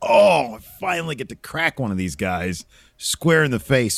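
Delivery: ordinary talk, nothing marked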